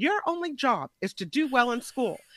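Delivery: motherly voice. Recounting what they tell her, imitating their mother's voice. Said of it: "it's like my mother's voice coming out".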